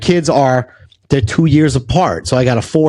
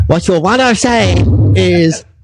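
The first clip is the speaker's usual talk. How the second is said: put-on Chinese accent; 4 semitones higher than usual. Recalling his third-grade speech teacher's correction, imitating Mister Chan's Chinese accent. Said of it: "and he had Chinese".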